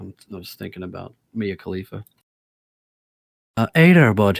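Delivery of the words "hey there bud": put-on Irish accent, louder. Reading a quote aloud for the group: Irish accent as Brendan Green. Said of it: "You do the best Irish accent in here".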